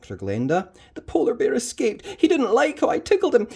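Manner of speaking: ordinary delivery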